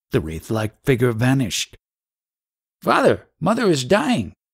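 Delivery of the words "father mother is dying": very high terrified cry with swinging pitch. After a ghostly vision, the narrator wakes the father, terrified. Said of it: "The terror in my tone aroused him instantly".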